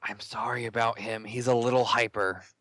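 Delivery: whispered line in a character voice. Voicing a character who apologizes to an invisible woman: whispering in character. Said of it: "casually and I whisper".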